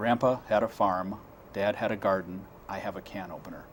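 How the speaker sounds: normal talking voice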